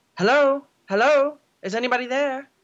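high, loud calling shout. Footsteps approach as a young voice calls out: shouting. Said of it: "young [name]'s voice shouting".

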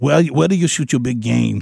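put-on thick, laid-on Afrikaans accent. Imitating a South African visitor asking about big game: thick Afrikaans accent like Arnold. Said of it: "They got that real thick accent".

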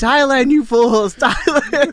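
full-throated, high, loud scream into the mic. Speaker recalls yelling into the mic at guys who couldn't decide; retelling a scream. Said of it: "I'm screaming".

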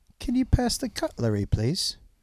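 clumsy put-on British accent. Trying a british accent for another speaker: bad british accent. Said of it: "See how bad that is?".

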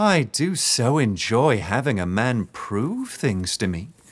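syrupy, honeyed, mock-sweet slow drawl. Narrator voices a woman answering James as she ties his wrists, sickly sweet. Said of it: "her voice sickly sweet".

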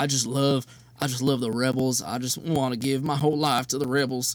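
put-on tearful coach voice. Imagining a coach crying about loving the Rebels: Matt Luke impression. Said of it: "really good Matt Luke impression".

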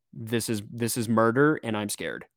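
ordinary talk, nothing marked

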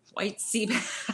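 laughing through the words.

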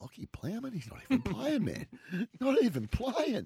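very high, squeaky commentator-style reaction. Retelling how Jared reacted to a mixed-up name: imitating Jared's reaction. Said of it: "Jared just looked at him like".

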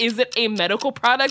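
plain

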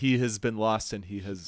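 ordinary talk, nothing marked

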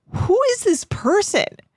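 baffled high exclamation.

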